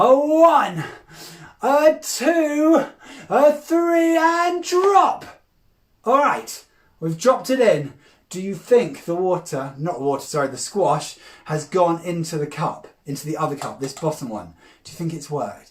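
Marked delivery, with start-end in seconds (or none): 0.0-5.3 very high, loud, very slow, stretched-out counting. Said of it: "count with me, boys and girls, as loud as you can".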